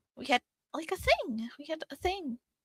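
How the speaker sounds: voice gone very high and squeaky. Admitting in character to having had a thing with someone: very high-pitched voice. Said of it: "your voice went very high-pitched there".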